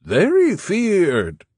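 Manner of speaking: loud, very high-pitched falsetto. Narrator reading a character's interjection after a question, in a falsetto voice. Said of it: "Don Juan interjected in a falsetto voice".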